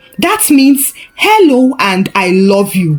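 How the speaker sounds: plain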